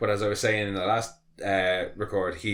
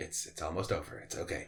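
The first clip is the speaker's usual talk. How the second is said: put-on sadistic soothing tone, lower and quieter; 4 semitones lower, 11 dB quieter than usual. Retelling a scene where a captured man is killed: imitating Homelander's sadistic hushing. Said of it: "he's real sadistic about it".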